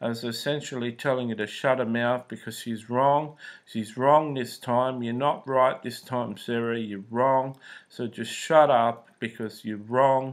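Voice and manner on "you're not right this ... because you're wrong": ordinary talk, nothing marked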